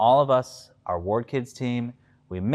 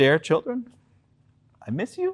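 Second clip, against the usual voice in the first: fake tearful, choked-up voice, higher pitch; 7 semitones higher than usual. Reading a letter from the playscape aloud, mock choked up. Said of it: "I get choked up a little bit".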